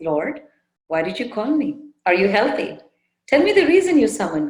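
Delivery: very sweet, tender, loving voice. Retelling Hemlekha greeting the prince: Hemlekha's sweet smiling voice. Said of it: "in a very sweet voice, smilingly".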